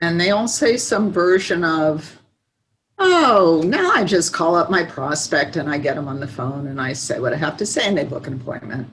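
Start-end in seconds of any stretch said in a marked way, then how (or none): 3.0-8.9 casual, unbothered, blasé, offhand delivery. Retelling what clients say at the end of the program: imitating blasé clients. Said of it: "they're very blasé about the whole thing".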